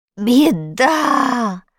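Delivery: groaning. A character watching a bound captive on a television screen, moaning. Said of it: "простонал Страшила".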